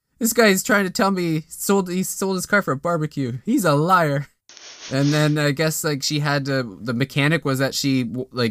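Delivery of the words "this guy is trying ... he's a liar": high voice, words broken up by a laughing fit. Retelling what a woman said to the speaker, imitating someone screaming with laughter. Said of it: "she's just screaming at the top of her head laughing".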